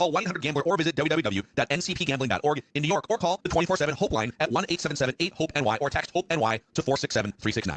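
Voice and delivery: very fast, rapid-fire, rattled-off reading. Reading a gambling helpline disclaimer, very fast talking. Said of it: "So hard to talk that fast".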